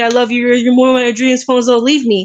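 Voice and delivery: tearful, crying pleading tone. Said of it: "and so he started crying".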